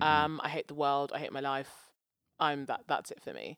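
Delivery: ordinary delivery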